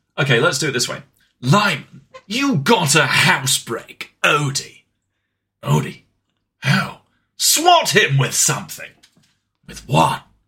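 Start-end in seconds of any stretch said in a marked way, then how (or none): 1.4-10.2 slow, drawn-out, dramatic comic game-character voice, wide pitch swings. Told to read the whole comic aloud in the voice of Solid Snake. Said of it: "read the whole of this comic in the voice of Solid Snake".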